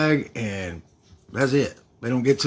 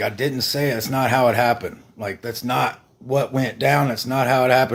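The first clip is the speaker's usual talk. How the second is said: ordinary talk, nothing marked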